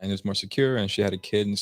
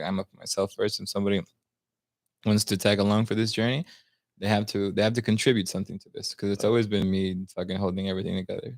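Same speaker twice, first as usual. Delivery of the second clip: plain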